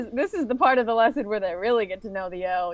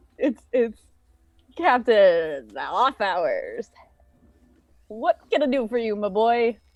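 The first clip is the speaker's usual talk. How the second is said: acted tipsy, drunk-sounding voice; 4 semitones lower than usual. Playing a captain greeting Steve, acting drunk. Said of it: "I'm very drunk at this point".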